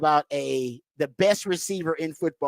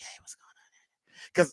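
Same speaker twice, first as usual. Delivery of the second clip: whisper, much quieter and slower; 9 dB quieter than usual. Speaker demonstrates how he talks when he talks dirty: whispering. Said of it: "I whisper like".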